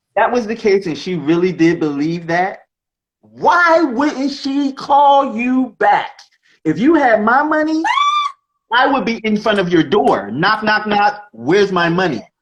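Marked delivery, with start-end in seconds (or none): 6.6-12.2 hard-pressing, demanding, confrontational tone. Speaker acts out confronting someone who owes money, mock-demanding. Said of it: "acting out demanding money at door".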